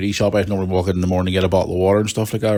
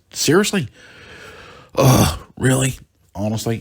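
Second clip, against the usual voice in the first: acted-out panicked voice, higher and slower; 5 semitones higher than usual. Traveller recalls waiting for shoes at airport security, retelling own panic. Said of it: "I'm standing there waiting and I'm panicking".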